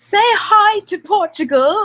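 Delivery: very high, slow, weak bad English accent. Saying hi to Portugal in a self-confessed bad English accent. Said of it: "in my best English accent".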